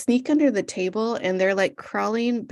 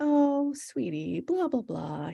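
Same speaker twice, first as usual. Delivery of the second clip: play-acted very nice, soft, high, gently sweet delivery; 5 semitones higher, 5 dB quieter than usual. Retelling how a dad turned down his son, imitating a very nice tone. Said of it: "He was very, very nice about it".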